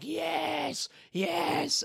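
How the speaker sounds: crying, very high, ecstatic screamed "yes". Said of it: "crying and screaming".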